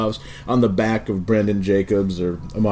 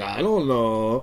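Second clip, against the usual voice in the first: fake Swiss way of speaking; 3 dB quieter than usual. Describing a musician going unrecognized abroad, doing an impression of swiss people. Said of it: "It's my impression of uh, Swiss people".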